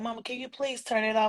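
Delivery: acted-out, tearful, boo-hooing sobbing. Retelling a youngest son's plea while listening together, imitating son crying. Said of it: "he was just boo-hooing, crying".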